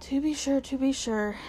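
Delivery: plain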